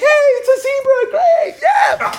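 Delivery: high, mock crowd-style yelling.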